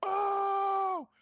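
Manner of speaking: very high, loud crowd-style "oh".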